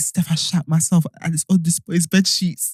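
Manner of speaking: mock whispering. Retelling a friend's late-night phone call: imitating a friend whispering. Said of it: "she was whispering".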